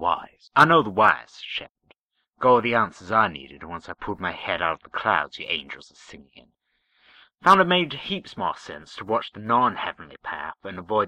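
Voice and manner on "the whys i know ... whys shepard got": ordinary delivery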